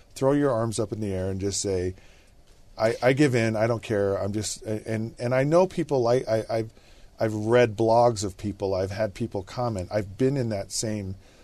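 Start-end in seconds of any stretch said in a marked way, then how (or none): none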